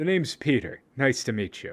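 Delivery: smug, oozing self-satisfaction. Voicing a character who reaches out a hand to introduce himself: smug. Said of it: "he's going to look very smug".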